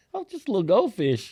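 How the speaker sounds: put-on high, funny childlike little-kid delivery. Retelling what a girl said climbing into her booster: imitating her funny delivery. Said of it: "in such a funny way".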